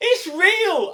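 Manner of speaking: shrill, high, booming loud shout. Retelling a moment in a nearly empty cinema, the speaker re-enacts a shout. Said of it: "I shouted out".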